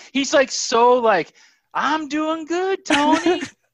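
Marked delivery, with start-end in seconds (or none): 1.8-3.5 very slow, down-home folksy drawl, pitched up. Imitating how Terry talks to Tony: Terry Simpson impression. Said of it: "That is an excellent Terry Simpson impersonation".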